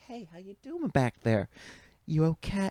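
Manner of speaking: acted, relaxed, unaggressive, calm, casual tone. Retelling what she said before punching: imitating a calm, cool, collected voice. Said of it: "in the most calm, cool, collected, not, not an aggressive facet".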